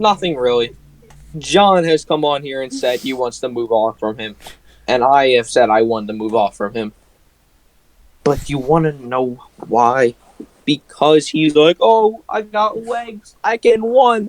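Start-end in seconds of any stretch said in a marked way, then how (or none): 11.8-14.3 put-on high, very slow, drawn-out babyish voice. Explaining why they want to move on from him, in a baby voice mocking Jalen Hurts. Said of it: "I did use a baby voice".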